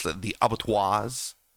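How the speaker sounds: pronounced with a French sound. Name the group whose leader was killed, as if speaking French. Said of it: "like he's he's speaking French".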